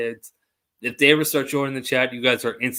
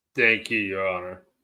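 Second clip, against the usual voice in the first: put-on low, manly voice; 4 semitones lower than usual. Thanking the judge at the end of a hearing, low man voice. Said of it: "that was my best low man voice".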